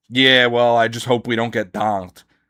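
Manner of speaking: mock timid, scared-sounding voice. Mocking a pro player who fears an opponent: mocking a timid player. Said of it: "you sound like a fucking loser".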